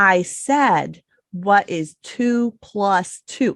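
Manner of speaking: very slow, drawn-out, deliberate speech. Showing a parent repeating a math question to a child: acting out talking more slowly. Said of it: "talking more slowly and saying".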